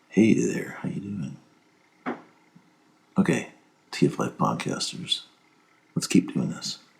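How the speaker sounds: right up on the microphone. Demonstrating a greeting to TF Life podcasters, right up on the microphone. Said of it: "basically where you're right up on the microphone".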